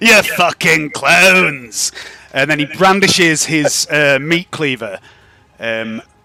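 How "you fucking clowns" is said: manic, mad, cackling villain voice, taunting tone. Narrating a tabletop game, voicing a character who taunts the group, cackling madly. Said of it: "he cackles madly. He goes".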